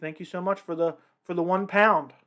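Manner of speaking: ordinary delivery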